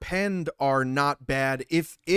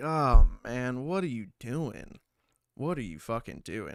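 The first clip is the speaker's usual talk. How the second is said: mock disappointed, let-down tone; 3 semitones lower than usual. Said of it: "That that tone is like".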